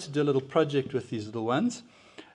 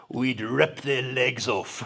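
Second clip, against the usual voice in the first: mock-angry, through clenched teeth. Retelling what a normally quiet little girl said, through clenched teeth. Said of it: "through clenched teeth".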